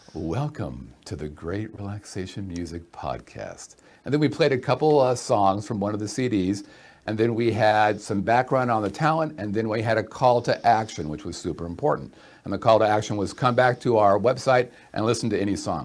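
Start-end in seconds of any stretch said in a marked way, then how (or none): 0.1-3.8 soft, polished public-radio announcer voice. Recalling hosting a relaxation music podcast, in an NPR voice. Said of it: "using my best NPR voice".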